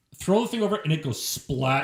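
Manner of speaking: normal talking voice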